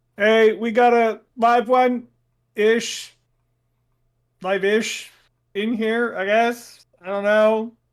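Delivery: very slow, loud, drawn-out yell. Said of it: "I would yell out to the rest".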